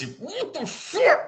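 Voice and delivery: very high voice, muffled as if through a gag. Game master voicing a bound and gagged woman, in a muffled voice. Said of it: "again in a muffled voice".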